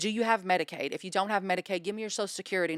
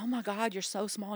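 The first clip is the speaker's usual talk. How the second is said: mock crying, much quieter; 4 dB quieter than usual. Retelling what she said when they got in the car, imitating someone crying. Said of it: "and she's like crying".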